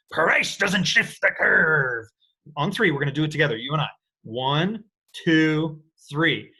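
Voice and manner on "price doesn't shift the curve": good, slow put-on pirate voice. Speaker demonstrates a phrase for listeners to repeat together on three, in a pirate voice. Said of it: "you've got to get a good pirate voice in there".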